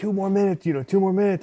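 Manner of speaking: high, urging, coach-style yell. Retelling a coach yelling during bike training: imitating a coach yelling. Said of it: "my coach is yelling at me".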